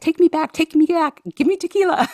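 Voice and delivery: play-acted frantic panicking, very high and loud. Retelling a video of Sara Blakely in a helicopter, imitating Sara Blakely freaking out. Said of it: "in the helicopter and she's freaking out".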